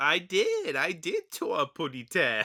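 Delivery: high, silly, sing-song voice swooping up loud. Discussing a cartoon with another speaker, quote Tweety mugging to the camera, silly Tweety voice. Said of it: "he says silly things in a silly voice".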